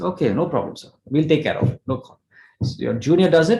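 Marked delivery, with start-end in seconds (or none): none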